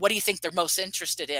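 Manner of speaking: ordinary talk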